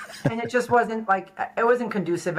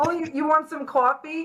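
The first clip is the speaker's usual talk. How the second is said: put-on Brooklyn accent, New York sound, much higher pitch; 8 semitones higher than usual. A guest from Brooklyn, told about the accent, does a Brooklyn accent. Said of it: "I would have never guessed that with the accent".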